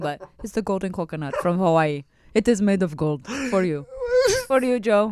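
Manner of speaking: improvised put-on Indian accent, sing-song. Acting out a theater handing him an award, in an Indian accent. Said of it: "Why do I sound Indian?".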